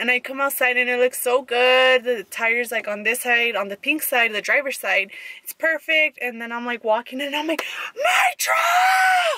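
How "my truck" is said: high, full-throated yell, "truck" stretched long. Retelling a reaction on seeing the truck: retelling a loud yell. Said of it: "so freaking loud".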